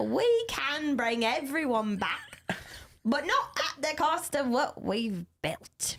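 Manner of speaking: muddled, put-on Australian accent. Taking a turn at doing accents, a speaker says a line in an Australian accent.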